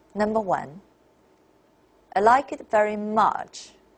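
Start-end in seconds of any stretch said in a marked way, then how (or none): 2.1-3.7 "much" falls away at the end. Intonation lesson, example number one: falling tone on much. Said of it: "listen to me and try to feel how the tones are made, and then how a for tone sounds like".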